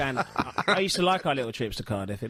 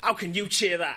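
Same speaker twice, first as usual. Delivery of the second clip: put-on Manchester accent, pitched up; 6 semitones higher than usual. Retelling what a guy who came up to them said, in a manchester accent. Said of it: "That's my Manchester accent, by the way".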